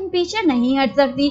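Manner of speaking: ordinary talk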